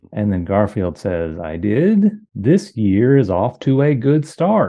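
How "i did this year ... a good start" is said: mock stilted reading voice, higher and louder. Imitating the boss reading a comic strip aloud: imitating a boss's unnatural read-aloud. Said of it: "So that's how he reads the comic strip out loud".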